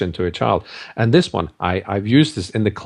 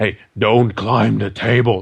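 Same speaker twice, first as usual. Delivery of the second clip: stern, dark-toned, slow voice. Showing how to warn a child not to climb the table, really dark voice. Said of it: "And you do it really dark".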